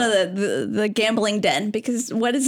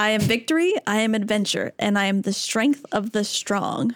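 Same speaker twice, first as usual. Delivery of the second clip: usual speaking voice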